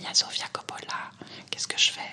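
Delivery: hushed whisper. Speaker retells the shop saleswoman phoning her, in a retold whisper. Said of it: "m'appelant en chuchotant".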